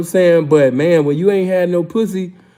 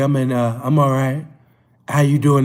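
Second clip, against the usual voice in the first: put-on sexy, seductive voice, much lower; 5 semitones lower than usual. Retelling his reply to a woman asking if he's okay, in a put-on sexy voice. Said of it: "I got my sexy voice".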